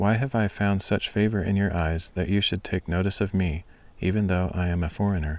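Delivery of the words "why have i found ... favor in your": usual speaking voice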